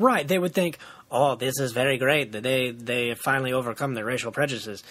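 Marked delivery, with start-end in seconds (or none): 1.1-4.8 put-on alien voice with a Hungarian accent. Imagining what visiting aliens would think: alien voice, Hungarian accent. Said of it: "The Hungarian aliens".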